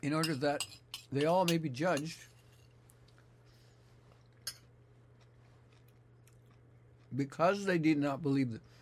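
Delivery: speaking with mouth full of food. Speaker reads scripture aloud while eating chili, talking while chewing. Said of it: "I'm chewing".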